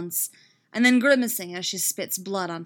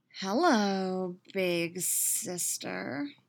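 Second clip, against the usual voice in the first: lingering, slow, stretched-out drawl; 6 dB quieter than usual. A kidnapper greets her captive, drawling. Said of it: "she drawls".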